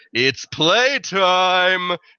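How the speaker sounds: booming, high-pitched voice carrying over everything. Voicing a character whose voice booms out through a runestone: booming voice. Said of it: "Hallister's voice booms out".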